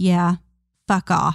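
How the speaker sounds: mocking mumble, muttered under the breath. Retelling how she turned around after being given orders, retelling a mumble. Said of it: "she turns around and mumbles".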